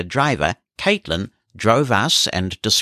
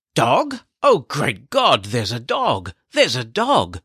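startled, disbelieving, astonished outcry; 4 semitones higher than usual. Recounting how a poll worker reacted to a guide dog, imitating someone astonished. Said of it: "the astonished poll worker exclaimed".

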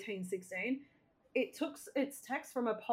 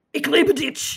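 very passionate, higher and louder; 5 semitones higher, 13 dB louder than usual. Showing how to say I love you in German, really passionately. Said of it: "Just really passionately".

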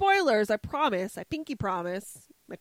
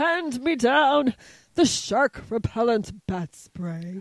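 loud, slow, deliberate, every word placed; 3 semitones higher, 5 dB louder than usual. Quoting the Batman line as Adam West: Adam West impression. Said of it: "That was a really good Adam West".

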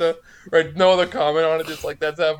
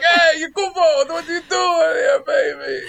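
put-on Brooklyn Italian accent, pitched very high; 11 semitones higher than usual. Mocking how all the characters would talk: put-on Brooklyn accent. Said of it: "It's just in Brooklyn".

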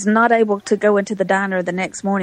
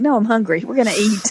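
ordinary talk

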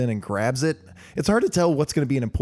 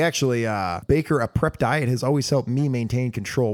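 ordinary delivery

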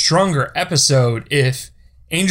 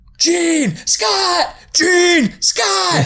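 mock, shrill, very high, very slow drawn-out yelling. Explaining a running joke from a 90s cartoon, imitating yelling names. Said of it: "every incarnation of Jean and Scott just yell".

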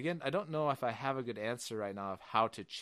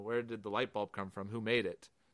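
usual speaking voice

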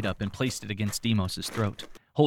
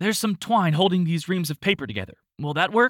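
high, raised shout at full voice; 9 semitones higher than usual. A narrator voices Flo calling to the others: shouting. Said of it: "Shouted Flo".

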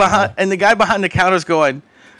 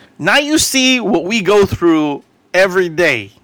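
ordinary talk

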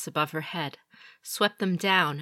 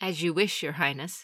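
ordinary delivery

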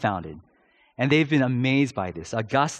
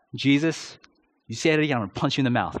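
ordinary talk, nothing marked

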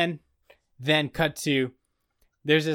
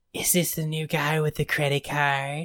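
sultry impression voice. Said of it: "Literally three seconds later, she goes".

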